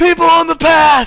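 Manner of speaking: very loud, very high, drawn-out yell. Voicing a man on the path who spots the travelers: NPC yelling. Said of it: "he starts yelling".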